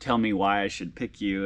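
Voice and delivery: ordinary talk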